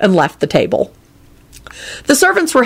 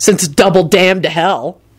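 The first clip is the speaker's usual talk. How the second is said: ordinary delivery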